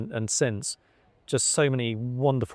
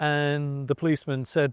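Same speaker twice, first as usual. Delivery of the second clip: plain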